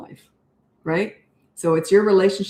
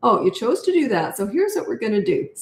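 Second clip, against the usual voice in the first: calm, easy, unbothered, lilting, sing-song, almost cheery; 4 semitones higher than usual. Demonstrating how to talk while disciplining, calm, almost cheery tone. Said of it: "See my tone? It's almost cheery, a bit of a lilt in my voice".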